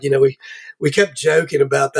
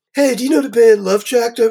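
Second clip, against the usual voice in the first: put-on high-pitched Baltimore local accent; 9 semitones higher, 3 dB louder than usual. Speaker recalls a woman introducing him to someone: Baltimore accent. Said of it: "with her Baltimore accent".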